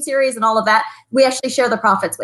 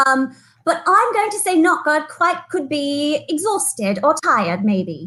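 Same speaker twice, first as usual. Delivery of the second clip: put-on storybook British English accent; 4 semitones higher than usual. Guessing what a British slang word means; British accent. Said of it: "I like the accent".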